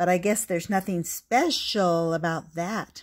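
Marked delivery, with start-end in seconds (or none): none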